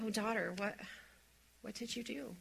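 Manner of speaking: soft, tender, grieving, compassionate, heartbroken voice. Voicing God speaking to Eve after she disobeyed: compassionate and heartbroken. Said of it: "out of compassion and out of heartbreak".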